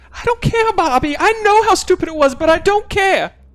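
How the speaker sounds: very high, loud, mocking doubled voice.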